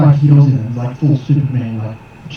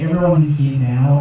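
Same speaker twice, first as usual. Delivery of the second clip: plain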